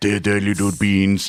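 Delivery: imitated French accent. Joking about what french press brings to mind: imitating a french accent. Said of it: "a guy with a French accent".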